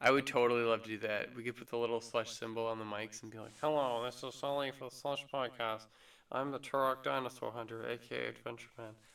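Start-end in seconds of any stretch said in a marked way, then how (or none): 3.6-8.9 geeky, extra-nerdy host voice. Imagining talking into the mics for the Slush Podcast, do a nerdy impression of Sully. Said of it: "I become nerdier in your impression of me".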